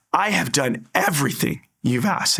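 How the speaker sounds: hurt, indignant outburst. Retelling looking up to the ceiling: retelling an angry outburst. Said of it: "I was so mad".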